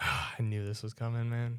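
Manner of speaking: quiet, put-out, upset tone. Reading out the number two pick in a movie ranking, sounding upset. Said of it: "why do you sound upset about that?".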